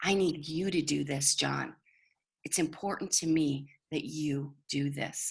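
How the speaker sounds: calm, quiet and deliberate. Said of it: "you are calm and you're quiet".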